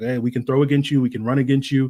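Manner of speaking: ordinary talk, nothing marked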